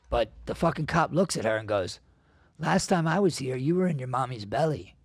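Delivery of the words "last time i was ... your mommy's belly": put-on friendly, sugary, sweet, nice-voiced tone. Retelling what a cop said to a two-year-old daughter: imitating a cop's nice voice. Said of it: "a nice voice".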